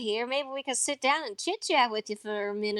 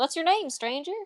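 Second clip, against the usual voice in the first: dainty, pretty, birdlike little voice; 2 semitones higher than usual. Telling how Jesse offers his hand to a stranger, in a pretty little bird voice. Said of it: "his pretty little bird voice".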